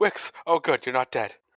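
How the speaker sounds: panicked voice full of alarm. Acting out how Arrow greets Wix, imitating Arrow's panicked voice. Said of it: "in a panicked voice just goes".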